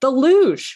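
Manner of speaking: sudden, blurted-out shout. Retelling a grandmother's answer to a table question: imitating a shout. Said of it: "my grandmother shouts out".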